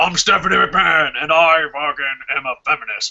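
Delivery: badly done tough voice pushed from the throat. Using the same impression voice for a woman: bad Triple H voice. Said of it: "that voice is every fucking person in the world".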